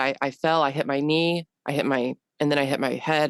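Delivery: normal talking voice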